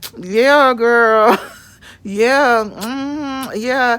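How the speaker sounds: closed-mouth mumble with drawn-out mm. Retelling talking to a girl while scared of bad breath, acting out barely opening mouth. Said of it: "So I'm talking like this".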